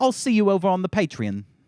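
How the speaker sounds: super fancy, posh put-on British accent. Trying out voices for a Patreon plug: super fancy British accent. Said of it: "Or like a British person. Like super fancy".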